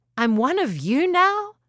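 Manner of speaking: high, astonished, surprised cry. Narrator reads a character just turned into a dragon, crying out in surprise. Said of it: "cried Hound with surprise".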